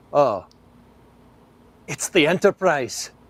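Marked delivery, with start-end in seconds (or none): 1.8-3.1 pitched-up Scottish accent. Asked to say a line in Scotty's voice: Scotty accent. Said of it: "I can do a pretty dang good Scott accent".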